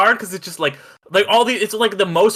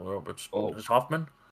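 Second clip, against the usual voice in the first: very low, hushed film-star voice; 11 semitones lower, 13 dB quieter than usual. Imitating an actor's voice to the others: Dustin Hoffman voice. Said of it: "he's got such, like, that, the voice".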